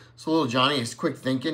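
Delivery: plain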